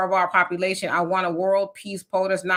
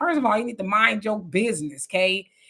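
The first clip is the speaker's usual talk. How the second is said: put-on woman's voice; 2 semitones higher than usual. Retelling a cafe argument, the speaker voices a woman's reply: imitating the lady's retort.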